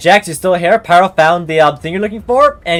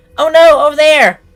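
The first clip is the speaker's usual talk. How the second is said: strained put-on high-pitched voice, much louder; 11 semitones higher, 5 dB louder than usual. Performer having trouble doing high-pitched voices, trying one out, straining for high pitch. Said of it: "I'm having lots of trouble doing high-pitched voices".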